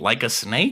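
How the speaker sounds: normal talking voice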